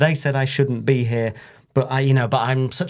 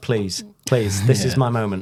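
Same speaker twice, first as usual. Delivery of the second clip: mock childlike pleading voice; 3 semitones lower than usual. Retelling how a wrestler looked at another, imitating a childlike plea. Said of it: "the child in him going".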